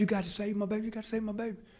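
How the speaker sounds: put-on loud, shrieked, repeated begging scream. Retelling a fire call where a woman yelled from the yard: imitating a woman screaming. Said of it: "this lady is screaming in the front yard".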